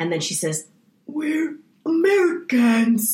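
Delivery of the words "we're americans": raspy, high-pitched voice, rasped out. Quoting the doppelganger's line in a very good impression: raspy voice of Lupita Nyong'o's doppelganger. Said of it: "it is a very good impression".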